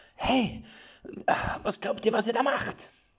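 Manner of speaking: very high, pained snorting, huffing cry. Narrator voicing a wounded woman confronting three figures, snorting in pain. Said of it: "schnaubend unter Schmerzen in ihrer Maske".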